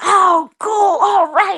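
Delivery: very high, drawn-out, delighted gush. Retelling the group's reaction to a mysterious sound: imitating excited reaction. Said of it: "we're excited".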